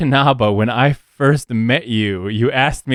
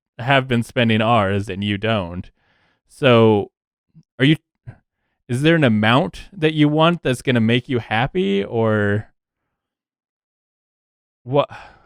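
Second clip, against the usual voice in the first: normal talking voice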